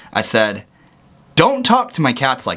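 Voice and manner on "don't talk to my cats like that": plain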